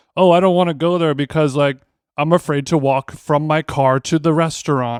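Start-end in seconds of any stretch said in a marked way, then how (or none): none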